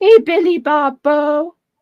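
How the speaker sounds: put-on high baby-talk voice. Retelling how Scotty greets his fish at the tank: imitating Scotty's baby talk. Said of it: "talks baby talk to Billy Bobo".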